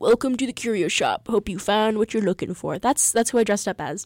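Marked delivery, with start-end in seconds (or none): 0.0-2.8 acted dog-like voice. Showing the Halloween costume character, the curio shop dog: Artifact from Webkinz impression. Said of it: "I do the impression that I just did for you".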